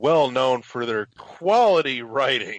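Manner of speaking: heavy, dripping, laid-on sarcasm. Introducing a website before picking apart its article, with heavy sarcasm. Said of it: "I say that with as much sarcasm as I can muster".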